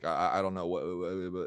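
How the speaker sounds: mock stammering, put-on stutter. Retelling how a neighbor who answered the door started talking: imitating someone stuttering. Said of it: "stuttering and saying".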